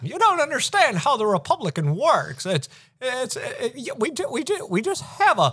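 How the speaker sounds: stammering, voice way up. Doing a stammering Jimmy Stewart voice after another speaker names it. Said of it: "You're doing Jimmy Stewart as Mitch McConnell".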